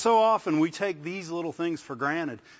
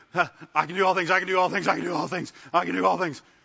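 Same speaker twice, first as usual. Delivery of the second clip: panicked, frantic, repeated delivery. Acting out praying frantically after bad news: imitating panic praying. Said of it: "then you realize you're panic praying".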